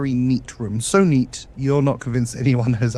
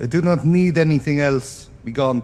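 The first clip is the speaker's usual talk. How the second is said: put-on Russian-accented character voice; 3 semitones higher than usual. A voice speaks from the other side of a locked door, Russian accent. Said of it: "Dom's Russian accents".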